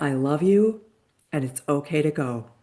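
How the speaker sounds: choked-up voice, cracking and breaking. Recalling her niece's words to the dog, the speaker's voice cracks. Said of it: "It still it makes my voice crack".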